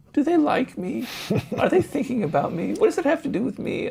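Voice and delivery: very high, needy, whiny put-on voice. Speaker acts out a listener's self-focused thoughts: whiny voice. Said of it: "I'm sorry using that voice".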